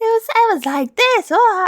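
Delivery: horrendous, badly faked put-on girl voice. Retelling how someone read manga characters aloud: imitating a horrendous girl voice. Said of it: "he had a girl voice, which was horrendous".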